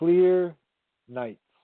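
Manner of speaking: very slow, high, drawn-out, savoring each word. Reading aloud for a listener with old ears who asked to go slow: reading very slowly. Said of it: "You don't need to go that slow".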